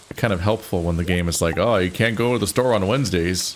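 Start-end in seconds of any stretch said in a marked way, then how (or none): 1.5-3.5 silly, goofy put-on North Dakota accent. Voicing what a game might say: goofy North Dakota accent. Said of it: "Said that in a particularly goofy way, like I'm from North Dakota".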